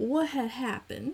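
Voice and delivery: high-pitched announcer-style title-call voice. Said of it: "on RuPaul's Drag Race when he says".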